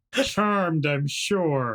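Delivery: words squeezed through gritted, clenched teeth. Voicing a tough old lady greeting a council member, through gritted teeth. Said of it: "between gritted teeth".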